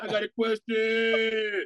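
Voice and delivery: very slow, dragging ghost voice. Joking about ghosts waking in a graveyard: ghost of a Radio Shack worker. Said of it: "the ghost of old Radio Shack workers waking up like".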